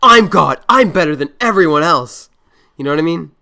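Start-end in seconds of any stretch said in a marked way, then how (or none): 0.0-2.3 loud, grumpy, entitled rich-man caricature voice. Imitating how a man sounds, like a grumpy cartoon bad guy. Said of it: "That's what he sounds like".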